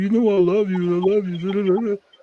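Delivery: very high, tearful, crying pleading tone. Retelling a breakup, the speaker imitates the woman crying and begging. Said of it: "she's crying and begging me back".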